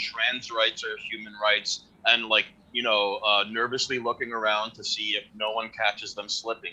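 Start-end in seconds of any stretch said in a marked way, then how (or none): 0.0-1.8 muttered grumble. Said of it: "people are grumbling".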